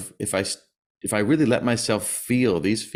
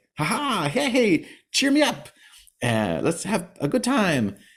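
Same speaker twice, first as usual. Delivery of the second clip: put-on bubbly, peppy, very high chipper sing-song; 10 semitones higher than usual. Retelling how a friend acted at their house: imitating a chipper, peppy friend. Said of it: "she'd be all chipper and peppy".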